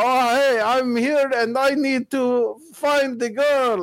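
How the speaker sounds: clumsy put-on Montreal accent, very high. Retelling a game moment when everything cuts to complete silence, do his line in a bad Montreal accent. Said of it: "him with his bad Montreal accent going".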